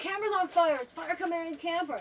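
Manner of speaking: high, loud, alarmed yell. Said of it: "I hear the guy in the camper next to us yelling".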